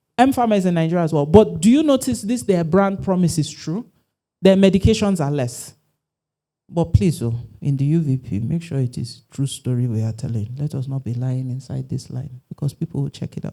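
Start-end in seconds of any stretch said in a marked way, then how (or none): 8.4-13.6 very quiet, low, hushed half-whisper. Speaking to an audience, dropping into a half-whisper for an aside. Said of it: "I had to whisper that part".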